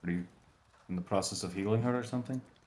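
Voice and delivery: hushed half-whisper under the breath. Voicing a character who leans over to a player: half-whispering. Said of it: "he's whispering it to you".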